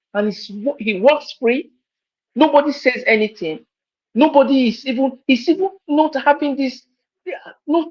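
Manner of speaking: overcome with emotion, voice pitched high. Speaker condemns what an official did to Nigeria, emotional. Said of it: "I'm so emotional each time I think about".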